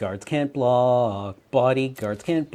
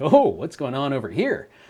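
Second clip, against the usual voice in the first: chipper, cheerful voice. Describing a card's voice acting: Ral Zarek voice, chipper. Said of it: "great voice acting where he's like".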